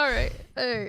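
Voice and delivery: speaking through laughter. Reacting to another speaker's remark about a national tragedy, laughing while talking. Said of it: "Why are you laughing?".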